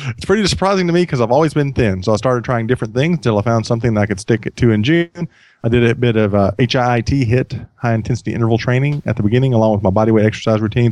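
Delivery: ordinary delivery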